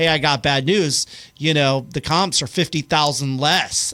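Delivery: ordinary talk, nothing marked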